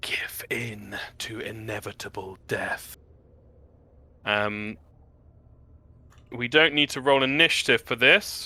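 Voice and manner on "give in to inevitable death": very quiet, slow, drawn-out hushed whisper. Voicing an unseen voice that speaks into the characters' ears: whispering voice. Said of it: "whisper in your ears that just says".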